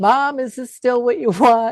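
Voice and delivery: very loud, high-pitched, tearful crying voice. Retelling asking Mom a question at her bedside: retelling own tearful question. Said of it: "I'm crying. I'm like".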